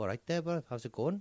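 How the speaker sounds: attempted Welsh, sounds Geordie. Trying a Welsh accent on request, but landing in a Geordie accent. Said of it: "That was Geordie".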